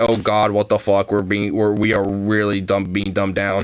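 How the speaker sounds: ordinary talk, nothing marked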